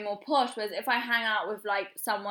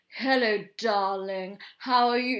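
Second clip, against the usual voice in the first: put-on upper-class English accent; 4 dB louder than usual. Recalling a first date with a very posh man, imitating a posh english accent. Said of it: "so posh to the".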